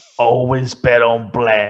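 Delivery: loud, slow, deliberate film-line delivery. Quoting a film line during a chat about a plane film: quoting Wesley Snipes film line. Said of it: "I was quoting him from a film".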